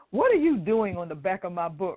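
normal talking voice

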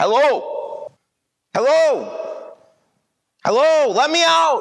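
very slow, high, stretched-out drawn-out yell. Trapped inside a coffin, a man yells to friends and family at the grave. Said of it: "yelled Shay from inside the box".

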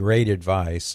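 slow, sarcastic air-quote emphasis. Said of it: "I might even use air quotes".

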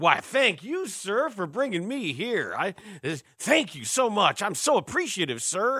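put-on humble, deferential voice, toned down. Discussing a number one pick, the speaker voices him in a Jim Crow voice. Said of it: "Was that like your Jim Crow voice thing".

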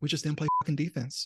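put-on hushed whisper. Recalling the angriest someone got after games: retelling a quiet whisper. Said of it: "he just quietly whispered after games".

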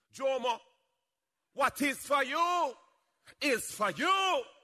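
put-on Jamaican accent, slow. Quoting a saying of the speaker's mother, in her Jamaican accent. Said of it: "as my mother would say in her Jamaican accent".

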